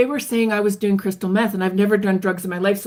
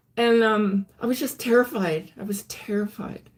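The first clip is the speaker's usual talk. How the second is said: ordinary delivery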